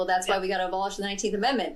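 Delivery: put-on, bone-dry, flat deadpan. Recounting a tongue-in-cheek episode with a co-host; retelling a deadpan line. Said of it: "Totally deadpanned".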